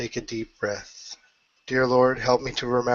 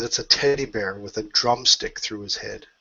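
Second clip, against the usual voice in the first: plain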